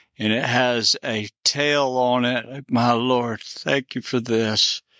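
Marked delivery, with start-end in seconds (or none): 2.7-4.8 trembling, shaking, overwhelmed and awed voice. Reacting while filming a video, speaking with a shaking voice. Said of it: "My voice is shaking".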